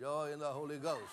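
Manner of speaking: flat, joyless delivery with zero joy. Mimicking how someone just repeated a phrase back: mock-flat, joyless delivery. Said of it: "There ain't no joy there".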